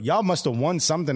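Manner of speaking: ordinary talk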